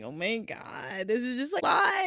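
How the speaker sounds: mock crying in a high, swooping, tearful voice. Retelling a call to the Airbnb lady, imitating own past crying. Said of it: "and I'm crying".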